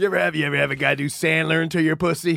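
put-on, imitated sexy voice. Imitating the other speaker, Robbie, asking a crude question: imitating Robbie's sexy voice. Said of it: "That's your sexy voice".

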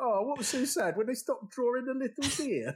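high-pitched, mocking, cynical tone. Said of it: "He went".

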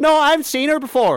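aggressive, very high, loud put-on Irish accent. Retelling a Nick Cage movie scene where a woman answers him, imitating an Irish accent. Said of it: "I don't know why she's Irish".

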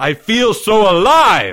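loud, very slow, drawn-out cry. Reading Leo's line in a story as he talks to Timmy, crying out. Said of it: "Leo cried out".

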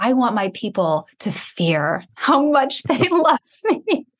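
play-acted, high, slow words pushed through laughter. Quoting a line from a TV character, laughing while talking. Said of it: "I'm laughing because I have Michael Scott's words".

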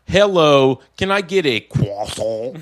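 croissant with put-on French pronunciation.

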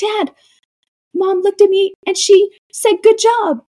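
put-on very high, thrilled, excited little-kid gushing voice. Retelling a mic'd-up kid skating over to his dad: imitating an excited kid. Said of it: "He's so excited".

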